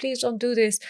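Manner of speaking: desperate, begging, top-of-lungs scream. Recounting an assault, quoting what they screamed at the time; retelling a top-of-lungs scream. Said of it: "at the top of my lungs".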